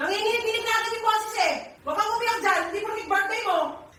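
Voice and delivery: yelling in anger.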